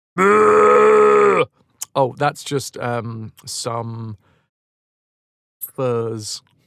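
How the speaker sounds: very slow put-on camel voice, drawn-out oh. Voicing a camel answering a question about a parcel: camel impression. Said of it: "That's my best camel impression".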